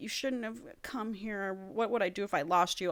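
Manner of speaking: soft, under-the-breath mumble, words running together. Retelling a book scene, quoting a half-conscious character: imitating someone mumbling. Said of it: "mumbling, like".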